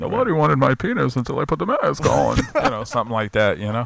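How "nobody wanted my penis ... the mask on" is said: creaky, raspy, pitched-up villain voice. Riffing about a masked Bane parody, speaker does a Bane impression. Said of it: "That was a very good impression of Bane".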